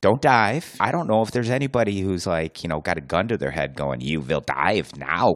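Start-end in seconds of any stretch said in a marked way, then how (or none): 4.0-5.4 slow, put-on German accent. Imagining someone ordering a diver at gunpoint, in a German accent. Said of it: "a German guy with this accent".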